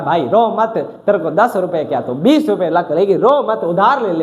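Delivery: ordinary talk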